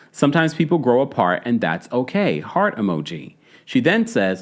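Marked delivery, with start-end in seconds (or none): none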